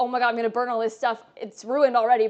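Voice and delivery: put-on panicked voice. Retelling a baking accident during a stream: retelling own panic. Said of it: "here I'm panicking".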